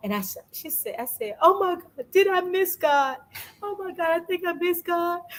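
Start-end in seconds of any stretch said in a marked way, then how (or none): 1.4-5.2 play-acted, very high tearful crying wail. Speaker tells a friend how they burst into tears, retelling own crying. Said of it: "I bust out in tears".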